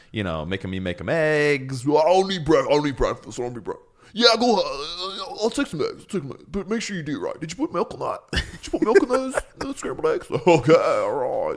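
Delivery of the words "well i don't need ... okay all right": just-woke-up, high-pitched morning voice. Imitating the other speaker demanding scrambled eggs: imitating his morning voice. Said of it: "It's his morning voice".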